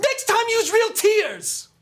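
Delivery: drawn-out, shrill, very high, very loud scolding. Voicing a kid who hits the crying kid: kid character scolding. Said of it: "he hits him and goes".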